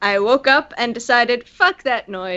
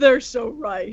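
obnoxious, nasty king voice; 3 dB quieter than usual. Joking about court jesters, voicing the king's reply as a shitty king impression. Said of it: "Is that your imitation of a shitty king?".

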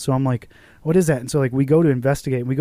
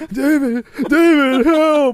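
high, loud, tearful crying; 13 semitones higher, 5 dB louder than usual. Retelling waking from a nightmare calling for a roommate: imitating own crying call for help. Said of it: "crying for my fucking roommate".

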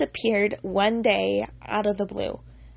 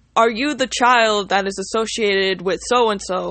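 grand, big, loud booming voice; 6 dB louder than usual. Retelling how a man came up to you, quote him in a big booming voice. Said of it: "in this big booming voice".

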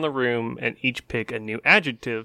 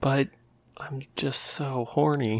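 lustful put-on voice, quieter; 4 dB quieter than usual. Playing a character, answering a request to stop: horny character. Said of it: "this is just my character".

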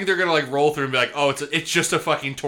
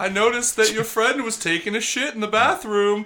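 casual, teasing ghost voice, pitched up high; 7 semitones higher than usual. A ghost crashes the podcast and talks to the hosts, in a Jareth ghost voice. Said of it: "I'm a ghost".

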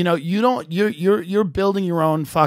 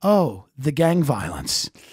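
mock very calm, slow delivery; 2 semitones lower than usual. Retelling what a woman told her when asked a question, imitating her speaking calmly. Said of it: "she said very calmly".

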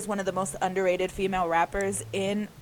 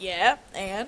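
mock casual, nonchalant, offhand, unbothered. Retelling how she answered the question: imitating a nonchalant reply. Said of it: "so nonchalantly".

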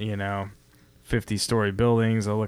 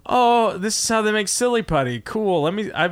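high-pitched, amazed tone. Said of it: "And you're just like".

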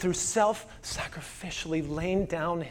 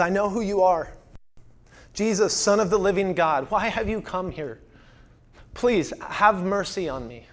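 a man crying out in desperation; 4 dB louder than usual. Retelling how a possessed man fell before Jesus: imitating a man crying out. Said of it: "he cries out to Jesus".

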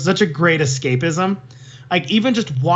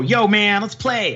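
guessed-at, put-on American accent attempt; 4 semitones higher than usual. After a friend wishes for American accents, the speaker demonstrates an American accent. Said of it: "I want to have some American accents".

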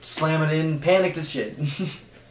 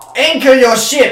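very high, very loud, shrill screaming; 9 semitones higher, 10 dB louder than usual. The boat's captain screams at the crew arguing without a plan; screaming ship captain. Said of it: "the captain is going to scream".

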